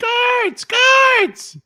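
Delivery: high, loud, high-pitched screaming.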